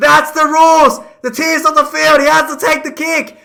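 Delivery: very loud, high, frantic screaming. Retelling a man screaming the rules at a referee: retelling a scream. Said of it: "he starts screaming like".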